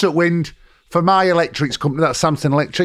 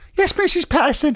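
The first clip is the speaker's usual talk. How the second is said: put-on teenager voice, higher pitch; 12 semitones higher than usual. Imitating how they used to sound, recalling Kevin the teenager: Perry voice. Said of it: "Remember Perry?".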